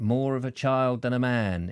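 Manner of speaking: normal talking voice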